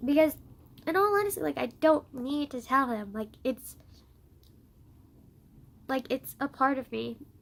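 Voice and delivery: crying while talking, tearful voice. Explaining why they no longer feel obligated to tell him, crying while talking. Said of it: "I'm crying a lot more than I thought I would".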